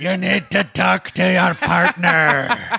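slow high monster voice. Playing a Frankenstein therapist after being asked how he sounds: Frankenstein therapist voice. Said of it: "more of a Frankenstein therapist".

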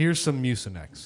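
ordinary talk

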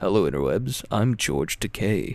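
low, slow, stretched-out voice. Joking about how the co-host sounded: George Takei voice. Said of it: "I thought you were gonna be like".

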